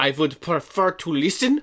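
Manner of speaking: heavy fake German accent. Recounting what the fake Doctor Theo said after sitting down: fake Doctor Theo's fake German accent. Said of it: "has a big old fake German accent".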